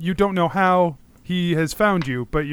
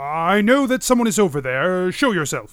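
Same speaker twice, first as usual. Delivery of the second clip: put-on voice of an aging, older man; 3 semitones higher than usual. A game narrator voices an unseen figure calling out hidden players: older man voice. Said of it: "you hear an older man voice say".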